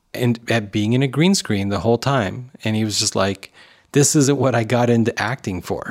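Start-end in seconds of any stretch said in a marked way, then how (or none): none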